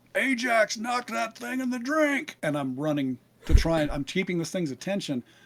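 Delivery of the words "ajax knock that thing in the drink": very high yell, thrown backward. Calling to an ally while running from a gun: yelling over the shoulder. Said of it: "I'm yelling over my shoulder".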